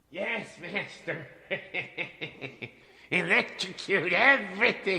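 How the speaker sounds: high, very quiet, soft, otherworldly alien-like voice. Voicing Igor replying to his master's thanks: Igor voice, alien-like. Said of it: "He sounds like talking alien".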